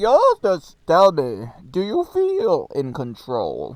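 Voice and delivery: booming, slow voice with swooping pitch. Redoing a line after saying that's not the voice: Bane voice. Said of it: "I fucking love Bane".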